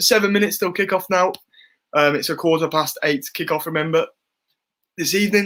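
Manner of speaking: talking with hiccups. Counting down to kickoff for viewers, hiccuping while talking. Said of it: "I have the hiccups".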